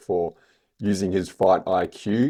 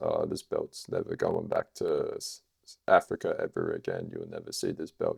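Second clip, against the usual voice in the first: hushed whisper from the throat; 14 semitones lower, 9 dB quieter than usual. Showing how a calm fighter would talk about his belt, imitating a calm, throaty whisper. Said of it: "talk like this".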